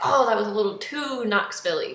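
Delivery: ordinary talk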